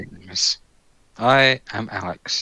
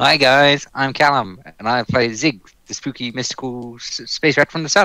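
put-on South African accent, high and loud; 5 semitones higher, 6 dB louder than usual. Giving a player's intro in his voice: imitating Callum with South African accent. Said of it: "I didn't know Callum was South African".

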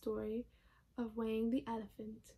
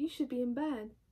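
ordinary delivery, nothing marked

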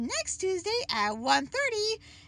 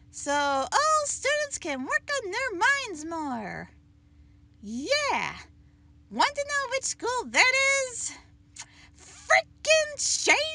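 snarky, griping, sarcastic, chatty announcer-style delivery; 2 semitones higher than usual. A school secretary doing the morning announcements at her high school: sarcastic morning announcement. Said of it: "Here, one of them has returned to do secretary work and do the morning announcements at her oddball high school. / Here, one of them has returned to do secretary work and do the morning announcements".

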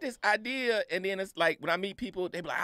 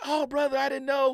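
imitated screaming, higher in pitch; 8 semitones higher, 4 dB louder than usual. Retelling what a family member said after the show: imitating someone screaming. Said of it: "But she's screaming".

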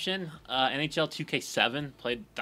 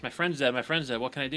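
ordinary talk

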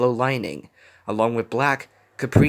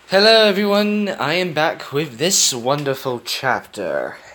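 ironic, heavily sarcastic with a swinging tune; 3 semitones higher, 4 dB louder than usual. Greeting listeners on returning with a new chapter, sarcastic. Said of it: "I'm being sarcastic".

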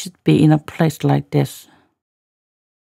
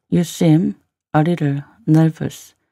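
"you seem", then a pause before "a little nervous".

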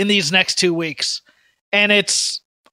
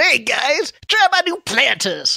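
hip youthful skater-dude voice, pitched up; 5 semitones higher than usual. Joking about a rebooted mascot riding a skateboard: hip young Mr. Peanut voice. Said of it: "a young Peanut on a skateboard going".

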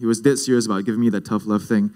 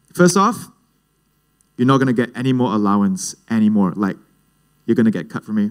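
usual speaking voice

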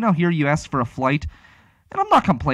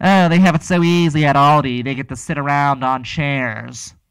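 acted stuck-up, snooty, superior know-it-all tone; 4 dB louder than usual. Imitating people who belittle working at Aldi, in a mock-snooty voice. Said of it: "with their snooty voice".

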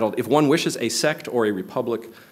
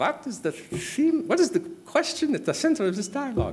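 put-on German accent, much higher, slower; 13 semitones higher, 3 dB quieter than usual. Retelling a reading-group story, the speaker quotes Strauss in a high-pitched German accent. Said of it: "(HIGH PITCHED GERMAN ACCENT)".

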